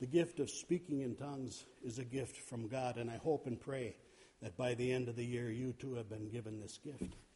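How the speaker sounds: low, soft, calm, quiet delivery.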